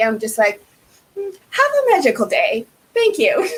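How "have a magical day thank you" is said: mock sarcastic tone, much higher pitch. Recalling what they said to people left without a bus, retelling a sarcastic remark. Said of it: "I sarcastically said".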